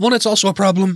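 voice cracking. Speaker mid-argument when their voice gives out: voice cracking. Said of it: "there goes my voice".

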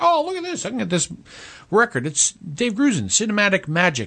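high, swooping put-on voice. Retelling what the dad said about a record, imitating his voice. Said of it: "your impression of your dad".

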